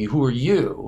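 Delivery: mock-sarcastic. Retelling how she leaned in and spoke to the speaker, mock-sarcastic. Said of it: "sarcastically says to me".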